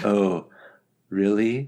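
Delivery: mock deadpan, calm and unbothered. Retelling a character's reaction to a warning: imitating a calm, unbothered reaction. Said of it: "very calm and chill".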